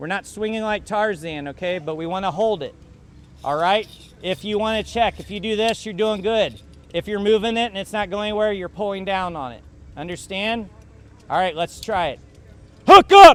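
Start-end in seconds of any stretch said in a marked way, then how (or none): 12.9-13.3 very loud, very high yelling. Calling out the command during practice, yelling a command. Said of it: "I'm gonna yell".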